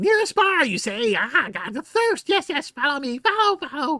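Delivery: birdlike creature voice, high, loud, raven-like. Voicing a raven-like Kenku guide asking for payment: Kenku guide voice. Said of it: "clicks his beak".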